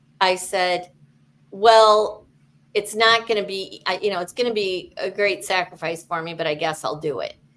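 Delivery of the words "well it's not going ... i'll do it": plain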